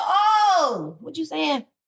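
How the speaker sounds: shocked outcry. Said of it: "I said".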